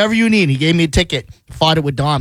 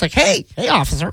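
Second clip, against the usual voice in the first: exaggerated put-on voice, much higher; 5 semitones higher than usual. Teasing a friend about talking to a police officer, in a put-on whiter voice. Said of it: "Did you even put on like a whiter voice?".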